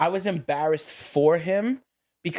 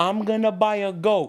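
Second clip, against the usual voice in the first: furious, angry, mangled broken English; 4 semitones higher than usual. Retelling to friends what a man said, doing his voice. imitating broken english. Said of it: "The most broken English you could hear".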